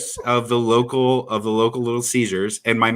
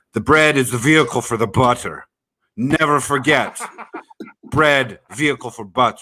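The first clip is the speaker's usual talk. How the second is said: put-on forceful, insistent, aggressive Greek accent. Telling a listener about a man's unforgettable quote, imitating his aggressive greek voice. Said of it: "I remember his Greek voice".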